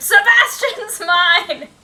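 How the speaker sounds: piercing, shrill high scream at full volume. Retelling what the other player screamed last time: imitating a scream. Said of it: "And you screamed".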